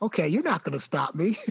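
put-on quiet muttering under the breath. Retelling a player's quiet trash talk to opponents: imitating Ryan muttering under his breath. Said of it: "talk to other players underneath his breath".

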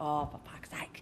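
muttered under breath. Speaker showing how she swears in the kitchen, muttered under breath. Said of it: "Under my breath".

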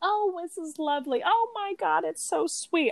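put-on very high, syrupy, doting, fawning gush. Retelling how two sitcom characters react at the end: mock fawning. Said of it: "fawning over it as they should".

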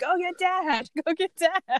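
very slow, high, stretched-out drawn-out yell. Recalling a bathtub mess, re-enacting yelling for someone to fetch dad. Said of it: "So then I'm like yelling at Claire".

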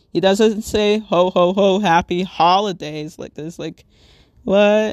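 usual speaking voice

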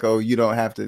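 ordinary talk

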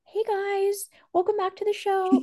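small, meek, timid voice pitched way up. Imitating her old podcast intro: imitating her own timid voice. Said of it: "my voice is timid".

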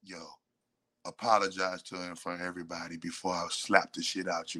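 hushed stage half-whisper, private and close. Acting out a warning said into someone's ear: acting out a half-whisper. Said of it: "he would have got a whisper in the ear".

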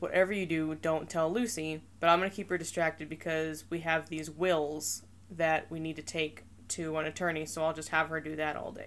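normal talking voice

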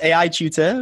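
very strong British accent. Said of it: "lo tengo que decir con mi acento bien británico".

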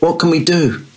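frantic, panicked, high-pitched voice. Watching a man thrash in the water beside the ship, a man asks, frantic. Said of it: "Salvatore frantically said".

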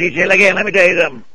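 put-on high, eccentric, small-town old Southern man voice. An actor shows how a character he played talked: Old Man Wampler voice. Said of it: "he talked like this".

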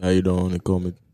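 very low, put-on, fake seductive voice. Wanting the sexy voice too, a speaker tries it out; fake sexy voice. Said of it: "I wanted to be the sexy voice too".

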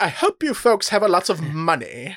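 put-on English accent with wide swooping pitch. Quoting a movie character's first line: imitating Ernie Hudson's English accent. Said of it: "like a Nigel Thornberry from the Wild Thornberrys type thing".

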